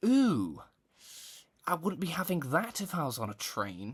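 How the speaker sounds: put-on plummy-posh northern English accent, high and slow. Retelling what a decrepit man said, imitating a posh northerner. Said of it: "posh, like sort of northerner ever".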